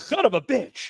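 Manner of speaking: high-pitched yelp. Retelling own reaction to the show: retelling own yell. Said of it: "I yelled".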